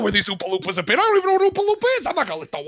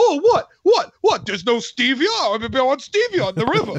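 put-on cranky old man voice. Imitating Larry David as Other Grandpa in Willy Wonka: Larry David voice. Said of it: "starring Larry David. He's like".

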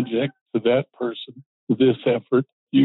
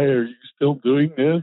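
usual speaking voice

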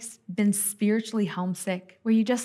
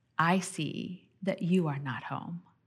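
put-on compassionate tone, lower and quieter; 4 semitones lower, 6 dB quieter than usual. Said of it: "She said it with such compassion".

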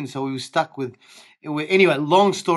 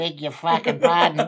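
ordinary talk, nothing marked

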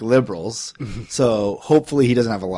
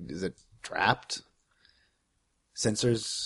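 barely audible, very quiet mumble under the breath; 10 dB quieter than usual. Retelling going to the door and checking for sensors: mumbling. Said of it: "I'm mumbling".

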